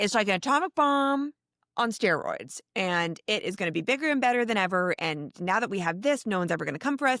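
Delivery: put-on eager, excited, boastful show-off voice. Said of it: "bragging and getting really excited".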